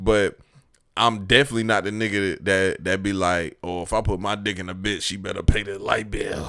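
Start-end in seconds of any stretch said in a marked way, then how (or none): 3.6-6.4 mocking, caricatured put-on dude voice. Mocking a type of man who expects women to pay bills: imitating a type of guy. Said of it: "What is his voice?".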